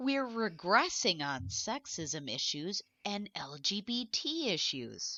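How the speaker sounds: slow, theatrical, dramatic reading aloud. Reading a tweet aloud with a co-host, as requested: dramatic reading aloud. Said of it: "would you care to join me in a dramatic reading".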